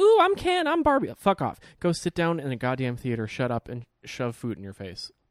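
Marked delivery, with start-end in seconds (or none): 0.0-1.1 very high, loud, swooning mocking squeal. Mocking people who dress up for barbie: imitating barbie moviegoers in costume. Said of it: "all the gays and ladies are like".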